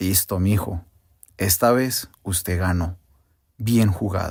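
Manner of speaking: low, slow, calm, composed voice.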